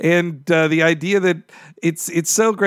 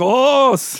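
mock old-fashioned voice; 7 semitones higher than usual. Imitating a cartoon character's voice just discussed: James Mason-y old-timey voice. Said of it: "it feels a little James Mason-y".

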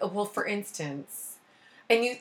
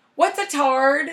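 put-on sudden, blurted, very loud, high child's yell; 7 semitones higher, 9 dB louder than usual. Speaker retells the kid overhearing her husband in the park, retelling a yell. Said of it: "she yells out".

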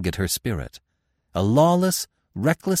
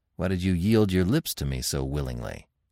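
ordinary delivery

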